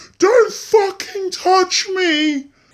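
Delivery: very loud, high, shrill screaming outburst. Retelling screaming at a teacher who reached out: imitating a scream. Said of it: "I just screamed out so loud".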